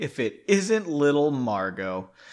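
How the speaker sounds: plain reading voice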